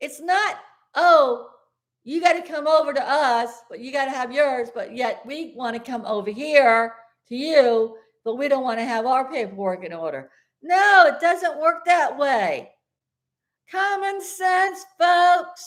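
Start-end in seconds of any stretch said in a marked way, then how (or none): 10.6-15.7 slow, exasperated, fed-up, every word pressed. Addressing folks, a speaker vents about a man who gets his goat: yelling. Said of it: "Now I'm yelling".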